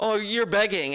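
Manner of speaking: usual speaking voice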